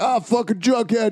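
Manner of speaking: put-on yelling. Imitating the other speaker yelling during a movie: imitating someone yelling in a theater. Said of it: "You're like".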